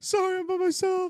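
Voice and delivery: crying, pitched very high, loud and tearful. Retelling a scene where a diner is asked to leave: imitating Jess crying. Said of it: "she just starts crying".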